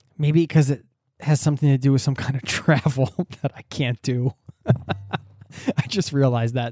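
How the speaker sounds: chuckling through words. Explaining why time travel appeals, laughing while talking. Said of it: "I'm cracking myself up now".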